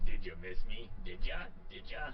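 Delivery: slow, gruff, unhurried voice. Trying the trait line as Wolverine again: gruff Wolverine voice. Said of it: "he would still sound gruff".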